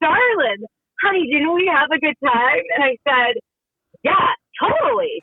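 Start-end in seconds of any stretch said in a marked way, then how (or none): 0.0-2.6 slight put-on country twang. Retelling what a man said reopening her car door, imitating a little twang. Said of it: "He had a little twang".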